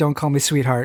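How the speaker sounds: hushed whisper. Called sweetheart while staying hidden, she answers, whispered. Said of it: "Agbayani whispers".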